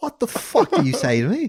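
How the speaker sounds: put-on British accent, very high, sing-song. Asked for a favorite thing to say in a British accent, speaker says it in a fake British accent. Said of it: "my favorite thing to say in a British accent".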